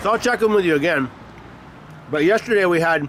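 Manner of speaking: talking with mouth full of food. Speaker checks in with listeners while eating a breakfast burrito: talking with mouth full. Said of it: "sorry, my mouth's full".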